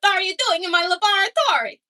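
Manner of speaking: loud, high-pitched cartoon voice. Doing an impression of Dexter from Dexter's Laboratory: Dexter voice. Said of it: "a really good impression of Dexter from Dexter's Laboratory".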